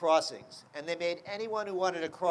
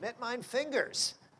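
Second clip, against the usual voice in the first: put-on Yiddish accent, pitched up; 6 semitones higher, 4 dB quieter than usual. Retelling a grandmother's punning answer to a question: Yiddish accent. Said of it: "dad jokes with a Yiddish accent".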